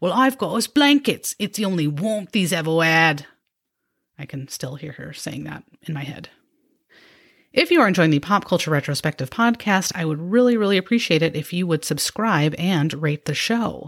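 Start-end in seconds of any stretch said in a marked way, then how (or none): 0.0-3.2 put-on British accent, a best attempt. Quoting a sister's reply to a question, in her best British accent. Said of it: "she'd say in her best British accent".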